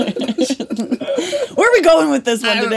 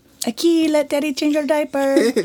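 put-on Mexican accent. Joking about adopting a teenager, playing the dad: mock Mexican accent. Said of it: "I should not be doing that accent".

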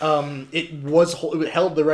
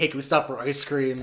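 plain

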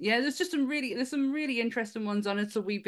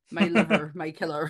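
accent from Cornwall; 5 semitones lower, 5 dB louder than usual. Saying a line the way it only sounds good: Cornish accent. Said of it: "do it in a Cornish accent".

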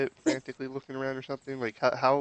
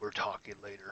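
soft whispered aside, close to the ear; 5 semitones lower, 11 dB quieter than usual. Player's character leans over to a companion, whispering in their ear. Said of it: "just whisper in your ear".

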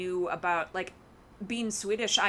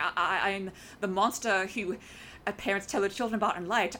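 stammering character voice, faster pace. Acting out an actor's breakdown scene for a co-host, stammering Loki impression. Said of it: "he just had this stammer in his voice of like".

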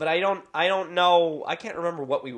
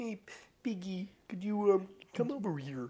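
put-on frog puppet voice, quieter; 4 semitones higher, 8 dB quieter than usual. Trying out Muppet voices on a podcast, calling to Piggy: Kermit the Frog voice. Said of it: "I can do Kermit".

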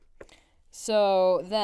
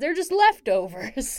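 high, loud, mock grandpa old man voice. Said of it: "Grandpa's like".

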